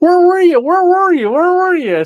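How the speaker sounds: very high, whiny crying dog voice. Retelling how the dog greeted them at the door: imitating a whining dog. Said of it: "she was so whining, crying 'cause I was home".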